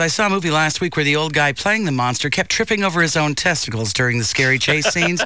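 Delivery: ordinary delivery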